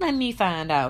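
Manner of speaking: casual, offhand, nonchalant and fairly loud. A woman comments among a group of girls, who chuckle at it; nonchalantly. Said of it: "Kelly said nonchalantly".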